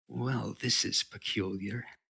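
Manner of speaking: sly, cunning, crafty creature voice. A game master voices a being whose voice rings out to the players: sly voice. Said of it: "And it says in a sly voice".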